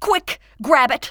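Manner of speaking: sharp, high, loud shout. A woman calls out as a squirrel threatens to get loose: shouting. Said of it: "Shouted Emma".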